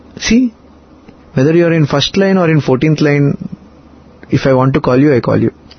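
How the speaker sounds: ordinary delivery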